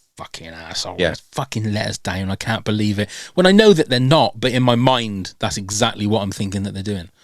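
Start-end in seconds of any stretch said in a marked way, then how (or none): 0.2-3.1 mock-angry, spoken through gritted teeth. A speaker imagines the people they let down typing a reply, imagined anger through gritted teeth. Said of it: "typing it through gritted teeth going".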